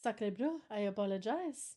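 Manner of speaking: put-on stock movie French accent. Apologizing after forgetting a promised bit: french accent. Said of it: "supposed to be doing a French accent".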